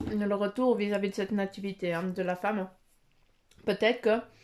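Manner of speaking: talking with mouth full, chewing. A speaker eating while talking and apologizing for it, talking with mouth full. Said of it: "de vous parler avec la bouche pleine".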